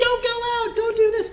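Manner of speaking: very high, squeaky, mocking nagging whine.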